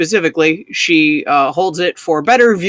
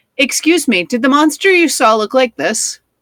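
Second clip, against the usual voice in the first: small, high, tiny little voice; 8 semitones higher than usual. Narrator voicing Dory asking others a question, in Dory's little voice. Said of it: "ask in a little voice".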